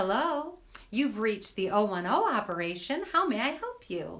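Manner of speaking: sincere, clear, pleasant receptionist voice. Showing how he used to answer the office phone, retelling a clear, lovely phone greeting. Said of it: "I said it with a lovely tone of voice".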